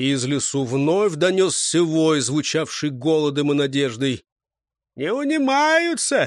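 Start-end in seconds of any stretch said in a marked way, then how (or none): 5.0-6.3 very high, noisy, clamoring outcry. Travelers react to another howl from the forest, clamoring. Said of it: "зашумели походники".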